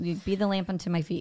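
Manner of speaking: ordinary delivery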